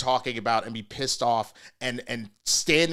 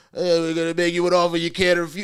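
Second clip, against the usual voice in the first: bad, clumsy mobster voice, slightly pitched up; 5 semitones higher, 4 dB louder than usual. Retelling a politician's attempt at a movie line: bad Goodfellas mobster impression. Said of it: "do a really bad Goodfellas impression".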